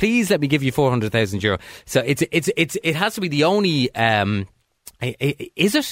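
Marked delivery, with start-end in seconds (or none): 0.0-1.6 earnest, pleading, begging tone. Continuing to act out begging an estate agent: mock pleading. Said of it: "you're almost pleading with the estate agent".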